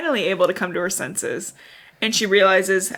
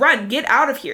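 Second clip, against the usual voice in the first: furious, high, angry screamed delivery; 5 semitones higher, 3 dB louder than usual. Summarizing a book passage, the speaker acts out him screaming at her to run: retelling a scream. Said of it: "he's just screaming at her to run".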